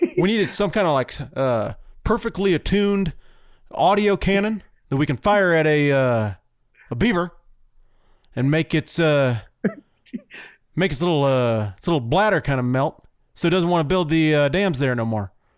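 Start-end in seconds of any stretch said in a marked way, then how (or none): 1.3-15.3 southern-flavoured presidential voice, lingering on every uh. Pitching a silly beaver cannon idea: Obama impression. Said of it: "Is that your Obama impression?".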